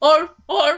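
barked like a sea lion call. Doing an impression the other speaker asks for: sea lion impression. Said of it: "Do your sea lion impression".

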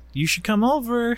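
high, put-on teasing voice.

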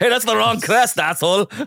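bad put-on Irish accent, very high-pitched. Mocking the other speaker's family crest research, in a terrible Irish accent. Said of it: "sounds like terrible Irish just now".

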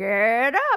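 talking parrot voice. Retelling how a pet African gray parrot woke a guest each morning: imitating a parrot talking. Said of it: "he would wake me up every morning and be like".

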